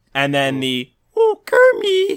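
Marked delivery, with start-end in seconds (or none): 1.1-2.1 very high, loud voice pushed until it cracks. Demonstrating the second side of Miss Piggy's voice, cracking Miss Piggy voice. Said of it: "my voice cracked while I did that".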